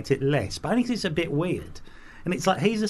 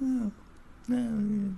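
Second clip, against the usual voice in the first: high, made-up rooster call; 7 semitones higher, 5 dB quieter than usual. Answering a request to do an impression of a cock: imitating the sound of a cock. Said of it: "do an impression of what you think it would be like".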